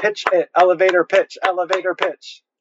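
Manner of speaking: high-pitched, eager, insistent tone.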